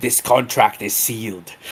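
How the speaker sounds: close, intimate whisper. Sealing a contract in character, whispering in his ear. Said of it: "I kind of whisper in his ear".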